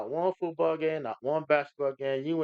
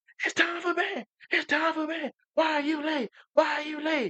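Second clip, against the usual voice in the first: acted-out very high, shrill yelling; 13 semitones higher than usual. Retelling early band hall mornings, imitating band directors yelling. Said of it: "they yelling too".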